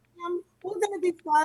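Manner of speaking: put-on very high, small child's voice, reassuring. A mother retells what her little children say to her, imitating her little children. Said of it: "little children tugging on my sleeve".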